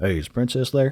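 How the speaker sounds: put-on elderly Southern accent. Retelling a scam phone caller asking for someone, in an old southern man voice. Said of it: "it's an old like Southern guy".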